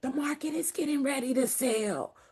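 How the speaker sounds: softly spoken, secretive hush.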